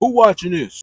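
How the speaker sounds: very loud, booming big-man voice. Retelling what a big man in the pod said: imitating a big man's deep voice. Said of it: "This man voice matched his face".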